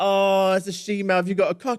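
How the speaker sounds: very high, shrill, very loud taunting, jeering yell. Speaker retells boys on the tube shouting at them, imitating boys shouting. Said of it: "were shouting at me like".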